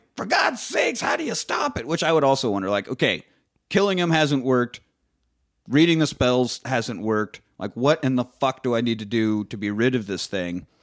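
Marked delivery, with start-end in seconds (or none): 0.2-1.9 mock, very high-pitched, yelped scream. Recapping a scene where a man faces a giant portal, retelling a scream. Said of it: "he's screaming like".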